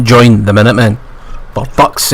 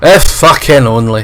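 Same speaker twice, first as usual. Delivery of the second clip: ordinary talk, nothing marked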